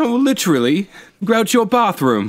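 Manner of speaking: very high, badly done put-on English accent. Imitating a man the speakers are discussing, in an english accent impression. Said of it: "He sounds like Crystalia's impression of an English guy".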